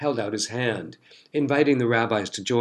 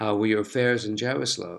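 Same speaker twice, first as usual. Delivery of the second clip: plain reading voice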